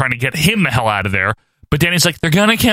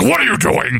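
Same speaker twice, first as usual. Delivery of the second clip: pissy, irritated tone in a high voice; 5 semitones higher than usual. Retelling a scene where Shredder sneaks up on someone: pissy Shredder voice. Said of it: "All pissy".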